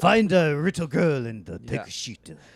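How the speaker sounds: put-on Japanese accent. Joking about walking around asking for a bathhouse: put-on Japanese accent. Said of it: "He can do the voice".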